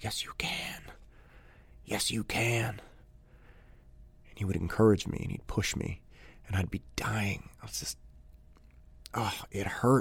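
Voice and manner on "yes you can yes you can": slow, soft, quiet, gentle whisper. Retelling a teammate's encouragement during training: imitating a quiet encouraging voice. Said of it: "he'd start saying really quiet".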